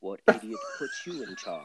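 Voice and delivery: low, swooping put-on voice, dropping low. Retelling a scene where he talks all in a Snape-like voice. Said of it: "all Snape-like, he's like".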